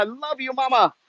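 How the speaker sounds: close to tears. Saying goodbye and sending love to Mama: close to crying. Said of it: "now I'm gonna start crying".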